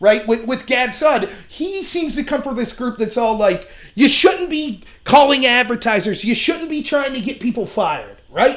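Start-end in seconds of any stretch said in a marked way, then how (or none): none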